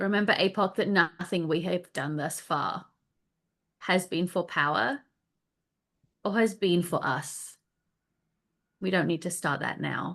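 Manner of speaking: loud, projected stage whisper. Voicing a character leaning over to a companion: loud whisper. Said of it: "whispers, I guess, loud enough for everyone else to hear".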